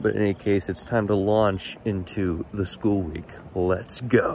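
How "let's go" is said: overly enthusiastic, lively delivery. Launching into the school week, with overly enthusiastic delivery. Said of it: "I said that with much more enthusiasm than I actually feel".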